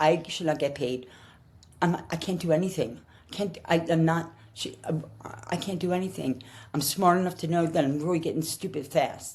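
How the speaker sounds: mock crying, tearful, halting words. Retelling own words to a boss after a stroke: retelling own tearful words. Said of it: "I remember just crying at my desk, saying".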